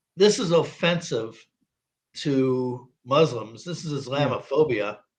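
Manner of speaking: plain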